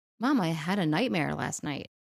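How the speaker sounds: usual speaking voice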